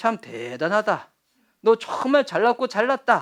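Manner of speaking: sneering, sarcastic tone full of irony. Explaining a thanks mixed with satire, acting out how it was meant: mock-sarcastic praise. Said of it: "마치 이런 거죠. ... 라고 비꼬는 식으로 했다는 거예요".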